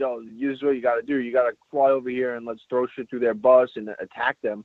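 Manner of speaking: usual speaking voice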